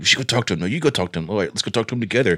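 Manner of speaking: whispered words. Retelling a talk with a buddy about going to talk to him: imitating whispering. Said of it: "kinda whispering".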